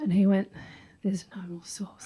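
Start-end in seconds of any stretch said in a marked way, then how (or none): 1.0-2.1 low, hushed, flat sinister monotone. Retelling what a man said to a girl, imitating a sinister monotone. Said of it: "The most sinister of tones".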